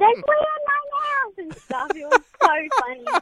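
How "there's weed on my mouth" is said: screaming in disgust. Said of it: "he was screaming around the house saying".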